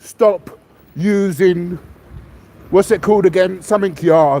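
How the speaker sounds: normal talking voice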